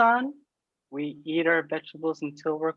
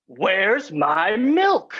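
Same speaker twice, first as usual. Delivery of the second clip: loud, cantankerous voice; 3 semitones higher, 5 dB louder than usual. Playing Old man Jefferson in a scene game: cantankerous old man.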